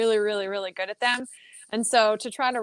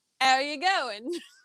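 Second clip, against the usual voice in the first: put-on London Cockney accent; 4 semitones higher than usual. Asked by the others to say a greeting, trying it out: Cockney-sounding accent. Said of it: "Now you sound Cockney".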